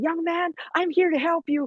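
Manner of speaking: screaming. Acting out a hypothetical scene at a wounded soldier: screaming at him. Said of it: "I start screaming to him".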